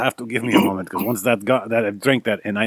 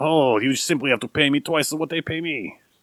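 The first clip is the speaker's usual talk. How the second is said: put-on French accent, higher, impish voice; 5 semitones higher than usual. Voicing the imp refusing a bribe: french imp voice. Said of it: "Oh, you're French".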